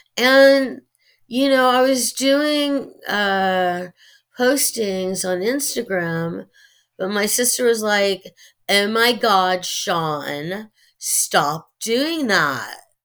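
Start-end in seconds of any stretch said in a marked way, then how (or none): 8.7-12.8 put-on slow, drawn-out Valley girl accent. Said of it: "That's a Valley accent".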